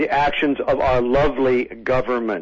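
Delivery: normal talking voice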